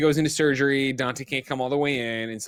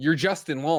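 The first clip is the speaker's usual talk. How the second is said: normal talking voice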